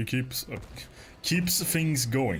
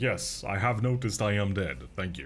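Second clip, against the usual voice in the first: usual speaking voice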